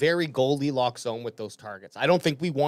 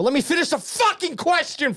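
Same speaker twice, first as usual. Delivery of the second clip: very high-pitched, shrill, angry yelling; 13 semitones higher, 3 dB louder than usual. Being interrupted while asking a question, yelling. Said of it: "that's somebody yelling at you".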